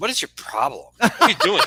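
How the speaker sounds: put-on character voice, swooping and animated. Retelling what Margo said about the drink: Margo impression. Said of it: "That's the best Margo impression I've ever seen".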